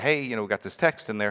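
plain

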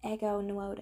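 put-on American accent, slightly Texan. Speaker tries to pronounce a name in an American accent, going slightly Texan. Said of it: "I'm going a bit Texan".

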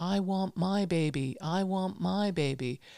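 very slow, drawn-out shouting, calling out. Retelling demanding a baby from the hospital nurses: retelling own shouting. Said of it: "So I started shouting".

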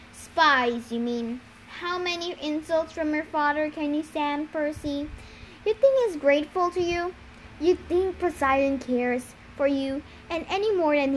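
ordinary delivery

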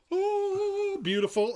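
high, delighted gasp of praise.

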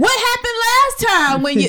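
exasperated, disbelieving tone. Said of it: "I'm like".

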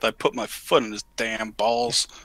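low, slow mutter under the breath. Voicing a character after a fight, muttering under breath. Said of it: "I'm gonna mutter under my breath".

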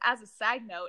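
plain

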